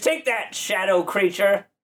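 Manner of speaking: put-on high parrot voice with a New Jersey accent. In a tabletop game, a player speaks as the parrot: new jersey parrot voice. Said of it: "and I'm that parrot guy, ... [name] has got a little bit of a New Jersey thing happening this morning".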